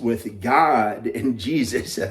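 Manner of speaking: Southern revival-preacher voice, sermonizing delivery. Recalling how someone's message changed, in a Southern preacher voice. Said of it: "Sounded like a Southern preacher".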